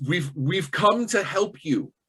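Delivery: put-on proclaiming, announcer-style character voice. Narrating a tabletop scene and voicing Hastrix, in Hastrix's booming voice. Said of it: "with kind of his his his booming voice".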